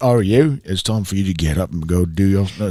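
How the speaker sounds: put-on London Cockney accent. Retelling how a man talks to the speaker, Bert-style Cockney accent. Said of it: "he just talks to me like a Cockney accent".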